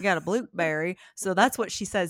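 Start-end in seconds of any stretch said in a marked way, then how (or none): 0.0-1.0 put-on twangy accent. Retelling how a niece teases Sean's twang: imitating a twang. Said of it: "he had twang and put a P in it".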